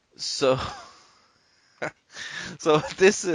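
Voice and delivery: talking through a laugh. Starting to introduce a news story that hammered the inbox, laughing while talking. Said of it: "I'm sorry for laughing".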